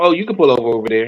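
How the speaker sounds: play-acted breezy, unbothered voice. Retelling a video, imitating the girl who didn't care: imitating someone not caring. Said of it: "And she didn't care".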